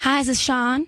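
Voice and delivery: American Southern accent. Asked to demonstrate an accent, the speaker acts out a phone greeting in a Southern US accent. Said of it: "Let's hear Southern".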